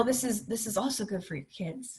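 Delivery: quiet muttering under the breath. Retelling what a mentor told the speaker in an RV: imitating Marjorie under her breath. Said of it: "kinda under her breath".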